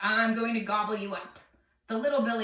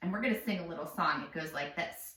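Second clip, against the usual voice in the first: ordinary delivery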